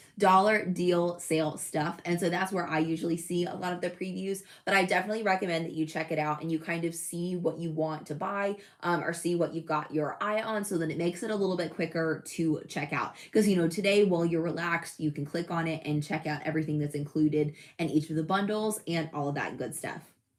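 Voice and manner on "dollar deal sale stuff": careful deliberate pronunciation. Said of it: "Say that ten times fast".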